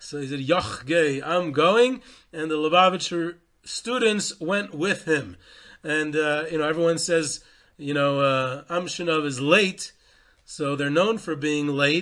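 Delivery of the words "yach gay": put-on thick central Polish accent, lower. Retelling a story, the speaker quotes the Amshinover Rebbe in his heavy central Polish accent. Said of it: "with his heavy central Polish accent".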